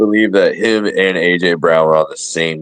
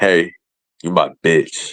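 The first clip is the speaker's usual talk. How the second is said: mocking, taunting tone. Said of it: "gets up to Rodgers and he's like".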